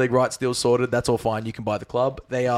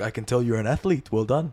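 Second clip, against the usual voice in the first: bad put-on French accent. Retelling a call with Arsene Wenger, in a terrible Arsene Wenger accent. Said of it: "That's a terrible accent".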